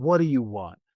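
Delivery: acted-out, venomous, vitriolic, hostile tone. Speaker retells his brother answering his phone call, imitating a vitriolic tone. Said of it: "I could hear the like vitriol in his voice".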